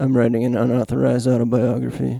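deadpan comedian impression. Asked by another speaker to deliver the joke: Steven Wright impression. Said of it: "in your best Stephen Wright impression".

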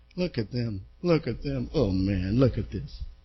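snide jeering under the breath, very low. The speaker recalls mocking testimony-givers with a buddy: retelling past mocking. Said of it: "I'm mocking".

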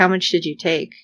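imitated super serious tone. Retelling a character asking how much was taken: imitating a super serious question. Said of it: "super serious".

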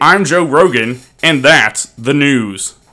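booming, resonant radio announcer voice. Arguing about how Joe Rogan sounds, doing a Joe Rogan radio announcer voice. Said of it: "I think that's my radio announcer voice".

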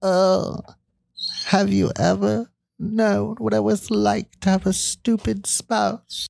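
put-on eerie, very high-pitched, creaky voice. Podcast host joking with the other host, in a creepy voice. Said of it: "that's a creepy voice".

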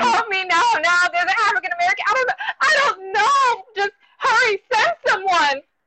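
over-the-top impersonation. Speaker reenacts a woman's phone call, exaggerated impression of the caller. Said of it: "in my best impersonation".

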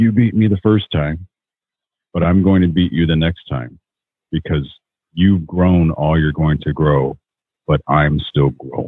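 ordinary talk, nothing marked

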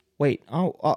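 put-on stuttering. Retelling being told a price at the store: imitating own stuttering. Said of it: "I'm just standing there stuttering".

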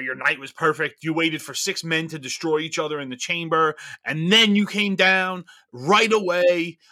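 normal talking voice

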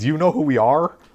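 tough soldier-like calling out, pitched high. Retelling an escape scene where one of the Rosenritters yells at guards: yelling. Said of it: "one of the Rosenritters guys yells".

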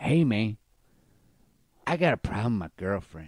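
casual, put-on Mexican accent. Retelling what a derelict guy said to him, in a put-on Mexican accent. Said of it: "he said in this accent".

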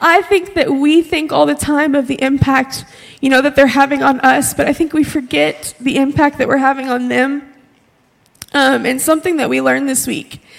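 tearful, crying, voice breaking. Speaking to others about what they learned this week: crying. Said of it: "I'm crying".

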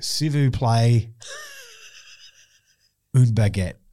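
French, heavy Australian accent, swooping. Retelling ordering a baguette in france, french with thick aussie accent. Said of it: "I'd say it with a real thick Aussie accent".

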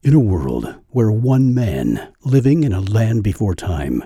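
dramatic, epic movie trailer announcer narration voice. Showing samples from your demo reel, doing a movie trailer voice. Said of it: "I've got a movie trailer voice".

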